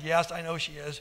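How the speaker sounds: casual and unconcerned. A man answers his companion about the lady following them, nonchalant. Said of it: "Kellen nonchalantly replied".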